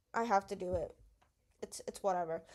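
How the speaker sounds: low, flat, robot-like monotone, no lift. Advising listeners on giving speeches, acting out a reluctant speaker: flat monotone voice. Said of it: "So don't just sound monotonous".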